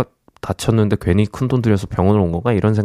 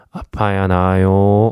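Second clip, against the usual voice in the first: mock very tender, sweet, gentle voice. Reading a listener's story, quoting the doctor: imitating a very tender voice. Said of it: "세상 다정한 목소리로".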